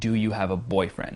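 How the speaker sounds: put-on pitch dropping, down-talk on "boyfriend". Asking a question in a very down-talk fashion, falling pitch on boyfriend. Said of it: "in a very down-talk fashion".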